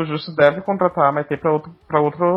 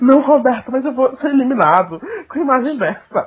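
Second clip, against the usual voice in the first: acted-out, high, tearful crying voice; 9 semitones higher than usual. Speaker retells a man pleading with roberto while being expelled: imitating someone crying. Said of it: "Ele chorando".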